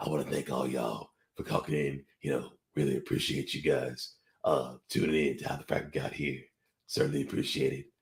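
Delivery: put-on, artificially deep, very low voice. Inspired by football, the speaker slips into a put-on deep voice. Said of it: "It inspires me to go deep voice again".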